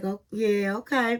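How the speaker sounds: feigned indifferent, uninterested tone. Retelling how a man answered a woman introducing herself, mock-uninterested reply. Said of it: "really acting like he wasn't interested".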